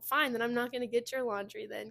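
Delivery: sassy, joking, cheeky tone. Retelling one's own reply to someone who snapped: imitating own sassy joking reply. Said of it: "Kinda jokingly, kinda just, like, sassy back".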